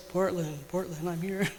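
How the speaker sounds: rich, deep, resonant, soft voice. Retelling how he calmed her each time she screamed: imitating a deep, resonant voice. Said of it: "He has this really deep, resonant voice".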